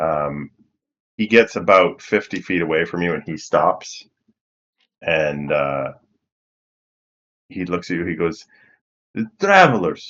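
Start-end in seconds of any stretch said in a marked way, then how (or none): 9.1-10.1 raspy voice, pitched up and loud. Voicing a man who stops and looks at the listeners, in a raspy voice. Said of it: "He says it in like kind of a raspy voice".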